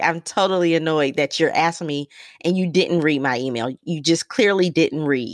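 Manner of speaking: ordinary talk, nothing marked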